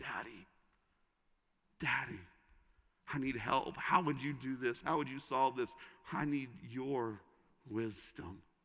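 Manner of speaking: soft, hushed, pleading cry.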